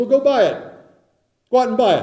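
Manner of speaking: mocking sarcastic tone. Retelling the scripture verse, answering the foolish who have no oil: sarcastic. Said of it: "Why is the scripture being sarcastic?".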